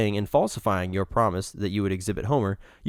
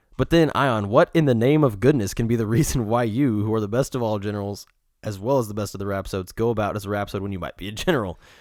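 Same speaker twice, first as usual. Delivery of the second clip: ordinary delivery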